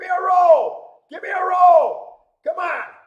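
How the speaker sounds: very high, very loud shouting. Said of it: "I'm sorry I'm yelling".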